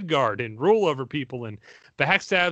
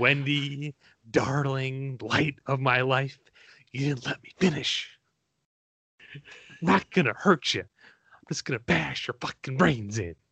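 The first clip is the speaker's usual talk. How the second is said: very slow, deliberate drawl, every word dragged out. Quoting a menacing film line to other speakers: Jack Nicholson impression. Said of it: "my spot on Jack Nicholson".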